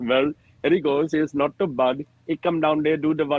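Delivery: comedic put-on Indian accent. A comedian retelling his time on stage, doing his Indian accent bit. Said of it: "And I started doing my Indian bit".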